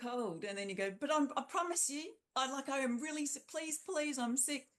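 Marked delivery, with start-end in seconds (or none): 1.0-4.6 stumbling, pitched-up, begging plea. Acting out a sick patient at the doctor: imitating someone pleading. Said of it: "You just don't have to plead normally".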